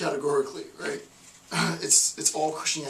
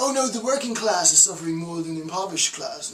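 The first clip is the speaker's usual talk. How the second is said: clumsy, bad, put-on British accent. Acting out representatives arguing over who suffers most: bad British accent. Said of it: "That was a bad British acc-".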